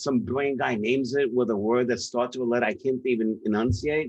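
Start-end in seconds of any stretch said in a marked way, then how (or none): none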